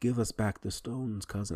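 clumsy, off-target hero voice, a bit high. Quoting how the hero always addresses his cousin: horrible T'Challa impression. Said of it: "that's a horrible impression".

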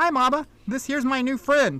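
put-on high, piping small girl voice. Narrating a scene, voicing the little girl speaking to her mama: little girl piping up. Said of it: "the little girl pipes up and she says".

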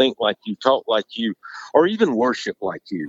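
usual speaking voice

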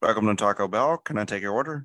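muffled drive-thru speaker-box voice. Playacting a drive-thru order scene as the muffled Taco Bell drive-thru speaker. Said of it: "I like that muffled sound".

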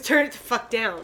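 normal talking voice

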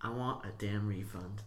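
normal talking voice

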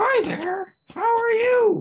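very high, loud ventriloquist dummy voice. Pretending to be a ventriloquist with a box: ventriloquist dummy voice. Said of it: "I'm totally like a ventriloquist".

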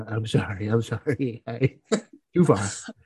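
very slow, drawn-out comic voice, every word dragged. Continuing the bit, apologizing after yelling at the wife: Adam Sandler impression. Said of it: "I do a whole Adam Sandler impression".

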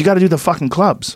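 angry, heated, insistent ranting. Retelling a comedian storming into the green room: imitating an angry rant. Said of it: "he was, like, angry".

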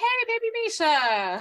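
very high, swooping, sing-song yell. Retelling calling out on spotting a young actress: imitating own past yell. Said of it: "I yelled out".

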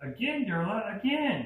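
put-on very high, loud little boy's squeal. Game master voices a boy playing with a creature: squealing young boy. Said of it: "One boy squeals".

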